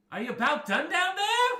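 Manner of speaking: shrill, very high, very loud halfling voice. A game master voices a halfling face peering down from the moon, halfling voice. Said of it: "hear a halfling voice just kind of poking out".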